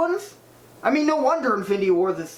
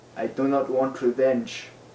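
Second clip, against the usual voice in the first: sultry put-on voice, pitched much lower; 6 semitones lower than usual.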